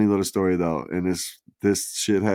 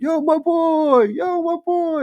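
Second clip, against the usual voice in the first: put-on very high, very stretched-out child's yell; 4 dB louder than usual. Retelling kids greeting each other in the street: imitating kids yelling. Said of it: "and they're yelling".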